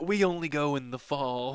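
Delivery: put-on snooty, aristocratic voice. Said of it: "is that like a pinkies out kind of comment?".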